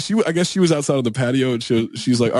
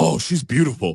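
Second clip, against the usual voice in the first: put-on, blurted, mildly emphatic exclamation, kept modest. At a bar, retelling what he said about a girl, retelling a loud exclamation. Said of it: "he's like like loud as fuck like".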